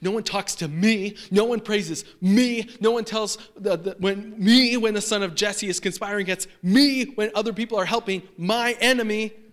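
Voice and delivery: high, loud, angry complaining tone.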